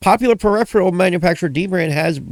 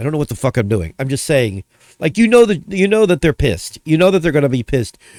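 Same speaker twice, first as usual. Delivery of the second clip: ordinary talk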